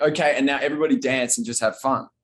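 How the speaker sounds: plain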